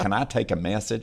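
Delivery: ordinary delivery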